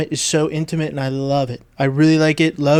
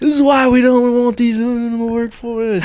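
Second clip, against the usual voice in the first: fed-up, pissed-off griping, pitched up; 7 semitones higher than usual. Retelling what waiting construction workers said, imitating pissed-off workers. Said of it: "just pissed off".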